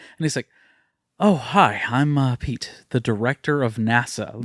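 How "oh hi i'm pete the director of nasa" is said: very slow, halting, stop-start character voice. Imitating a film character introducing himself: imitating a film character's line. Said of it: "The way that he says it".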